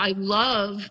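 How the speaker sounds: facetious tone. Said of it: "I say it very facetiously".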